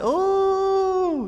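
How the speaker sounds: very high, squealed, impressed ooh of delight.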